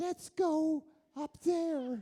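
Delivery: put-on small child's voice, very high pitch, very slow, drawn out. Retelling a silent-movie star's first sound film, in a high childlike Valentino voice. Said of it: "you sound like a three-year-old child".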